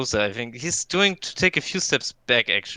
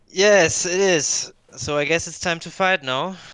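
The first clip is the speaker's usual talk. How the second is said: hesitant, uncertain, slightly high voice; 5 semitones higher, 4 dB louder than usual. Facing a giant Pokemon that dropped from the ceiling, uncertain. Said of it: "with a little bit of like um, uncertainty in my voice".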